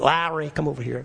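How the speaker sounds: put-on speaking with New Orleans accent. Retelling a man calling his brother Larry over, New Orleans accent. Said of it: "in his New Orleans accent".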